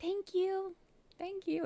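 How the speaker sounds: sugary, very high, slow put-on sweet voice. Thanking a viewer for a super chat: put-on sweet voice. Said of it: "obligated to make my voice sound sweeter".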